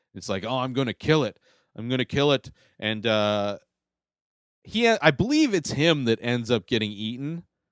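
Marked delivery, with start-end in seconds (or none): 0.5-2.5 put-on odd, weird, vaguely British accent. Describing a film character, quoting his line in a weird British accent. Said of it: "he's got like this weird like British accent".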